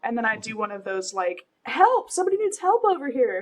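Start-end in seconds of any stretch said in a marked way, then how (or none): 1.6-3.4 urgent, desperate, high, loud shout. Retelling slapping a man's face, then shouting for help over one's shoulder. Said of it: "shouting over my shoulder".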